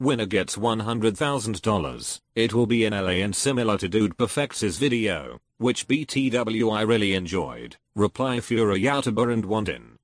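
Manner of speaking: robotic, synthetic computer-style voice. The speaker reads out a freshly posted tweet about an event, computer voice. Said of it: "I'm just going to use a computer voice".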